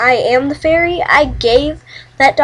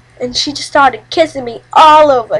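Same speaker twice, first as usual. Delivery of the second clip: ordinary delivery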